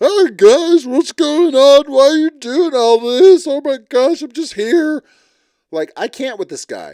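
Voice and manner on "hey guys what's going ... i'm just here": play-acted spineless cowardly voice, high and loud. Mocking a man on the show as a coward hiding in his shell: mocking a cowardly man. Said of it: "the biggest coward turtle going back in his shell".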